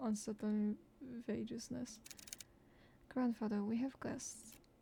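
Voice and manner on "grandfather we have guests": usual speaking voice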